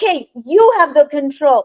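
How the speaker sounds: surrendering tone, said aloud and outright. Retelling waking up and speaking to God: retelling saying it loudly. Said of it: "saying to God loudly".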